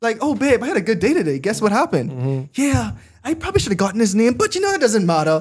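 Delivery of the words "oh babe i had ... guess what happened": bubbly, excited, sing-song chatter. Speaker pictures a woman coming home to her husband, imitating an excited wife. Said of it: "a female who's excited coming home".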